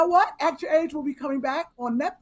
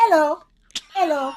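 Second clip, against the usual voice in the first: fake, put-on British accent; 4 dB louder than usual. Asked how to greet people walking into a room, put-on british accent. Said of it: "I'm gonna have a British accent".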